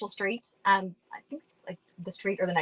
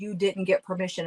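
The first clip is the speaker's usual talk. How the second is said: imitated growly robotic mechanical voice. Retelling the words a ghost recording said: imitating a growly robotic voice. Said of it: "a very growly, robotic-y voice that said".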